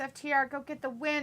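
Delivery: normal talking voice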